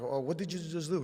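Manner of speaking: sudden pained cry, half crying. Retelling a hard squeeze on the calf: retelling screaming and crying out. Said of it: "start screaming, crying. I'm like".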